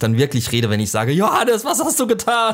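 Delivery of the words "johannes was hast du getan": high, loud exclaiming voice. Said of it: "So laut werde ich nicht werden. Aber so laut ungefähr".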